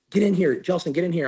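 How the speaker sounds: mock tearful crying. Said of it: "I woke up and I was crying".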